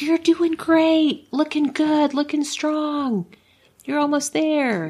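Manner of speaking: put-on high, loud cheering scream. Recalling what they would scream at the girls, the speaker is retelling a scream. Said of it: "I'd scream like".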